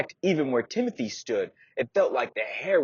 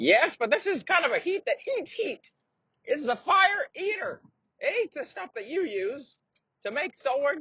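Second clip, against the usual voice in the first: put-on very high, doddering, crazy old-man voice. Narrator reading a story, an old man speaking to the blacksmith, crazy old man voice. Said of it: "He's a crazy old man. / he'd met this old man who used to be a warrior when he was young, but now he's old. / who's an old man who's hunkered over, / who's an old man who's hunkered over, / I don't re".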